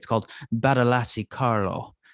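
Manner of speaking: put-on mock Italian accent. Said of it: "Nice Italian accent you got there".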